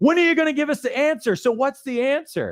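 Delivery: put-on frustrated, flustered, high-pitched delivery. Retelling a new team member's demand for answers: imitating a frustrated, flustered person. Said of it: "she's all frustrated and flustered".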